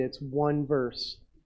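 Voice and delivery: slow, sarcastic aside.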